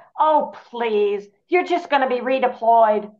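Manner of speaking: put-on fondly exasperated voice, irritated but affectionate. Recalling a voice in their head on a mopey day: mock-irritated but affectionate. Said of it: "in a very irritated but affectionate way".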